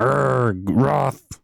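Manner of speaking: put-on grunting character voice. Guessing a character speaks with a grunt, trying it: grunting Wrath voice. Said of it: "does he speak with a grunt".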